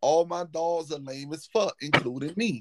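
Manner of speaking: ordinary delivery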